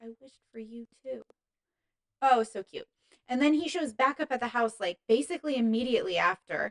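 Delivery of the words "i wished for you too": soft mutter under the breath. Retelling a favorite movie line, speaker acts out him muttering as she leaves. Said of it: "he like mutters".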